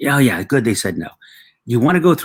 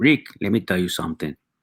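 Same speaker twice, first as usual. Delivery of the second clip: put-on Mexican accent; 3 semitones lower, 4 dB quieter than usual. Quoting your dad's inspirational advice as in your stand-up, in a mexican accent. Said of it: "with an accent, a Mexican accent".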